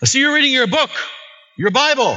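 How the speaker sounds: put-on very high, really loud, carrying voice. Retelling what a woman in prison said to the speaker, in a really loud voice. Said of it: "she's got this really loud voice".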